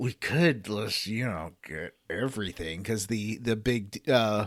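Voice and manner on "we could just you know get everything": hushed, put-on stage whisper. Retelling a companion's line from a game: Varric stage whisper. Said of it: "stage whispers to you".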